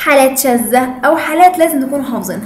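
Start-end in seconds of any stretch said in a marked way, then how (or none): none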